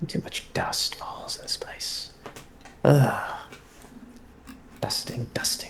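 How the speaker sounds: muttering under breath. A narrator voices a man who mutters while dusting, muttering under breath. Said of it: "maybe he mutters just like".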